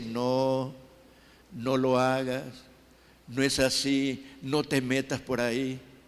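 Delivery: calm, tender, gentle, slow voice. Preaching about the Spirit's quiet inner voice: soft quiet voice. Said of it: "te habla así bajito y te dice".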